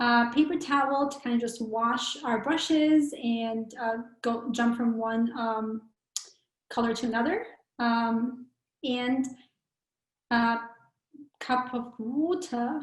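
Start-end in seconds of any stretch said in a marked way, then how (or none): 11.4-12.8 sudden switch into British accent. Listing class materials, saying one item in a British accent.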